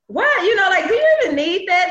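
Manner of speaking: high-pitched, loud, incredulous outburst.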